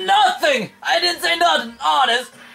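very high, scared, bad fake Brooklyn accent. Scared judge answering a question in the scene, in a bad Brooklyn accent. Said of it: "fear would induce a bad Brooklyn accent in the judge".

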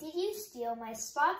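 ordinary delivery

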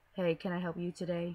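robotic speech, flat, with no feeling. Explaining how people in masks will speak with no emotion: emotionless robot voice. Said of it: "she's gonna be like a robot speaking".

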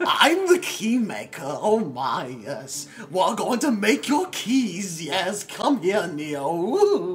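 fussy voice with one word drawn out. Showing how he'd play the Keymaker in Matrix Reloaded, in a Keymaker voice. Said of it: "because I'd be like this".

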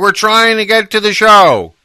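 loud high-pitched yelling. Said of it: "he started doing that whole yell thing".

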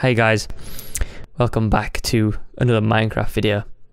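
flat monotone delivery. Imitating how he used to open his Minecraft videos: flat monotone voice. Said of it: "I used to be very monotone".

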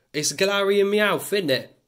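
put-on Cockney accent. Going through Pokémon cards, the speaker names one in a put-on Cockney accent. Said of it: "You gotta say Meowth like a Cockney person".

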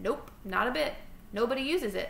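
ordinary delivery

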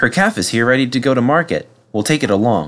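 plain reading voice

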